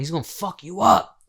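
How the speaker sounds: loud mock screaming, hollered out. Retelling a street fight, imitating a friend's scream. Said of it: "my homeboy was screaming out".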